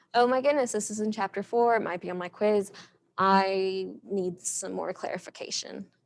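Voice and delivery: ordinary talk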